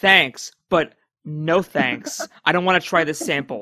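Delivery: loud, slow, deliberate dismissive brush-off. Retelling how the doctor turns Kirk away, imitating a dismissive customer. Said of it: "like a customer, like, you're in customer service and the customer's like".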